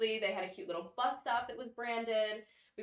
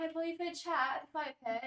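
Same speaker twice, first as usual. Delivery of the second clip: high put-on British accent. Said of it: "doing little videos with the producers in British accents".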